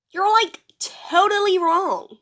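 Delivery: put-on valley girl voice. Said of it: "imitating a Valley Girl accent".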